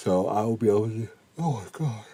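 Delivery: soft speech through a yawn. Speaker giving an update on rocket motors, yawning. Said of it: "Can't stop yawning".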